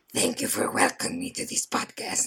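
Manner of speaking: whispered, hushed, breathy devil character voice. Asked on the podcast to do his voice, speaking in Lucifer voice. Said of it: "We need his voice".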